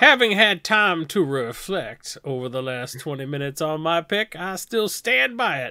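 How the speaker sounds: put-on genteel Southern gentleman accent. Standing by an earlier card pick after reflecting on it, in a Southern gentleman voice. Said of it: "I'm doing this Southern gentleman voice".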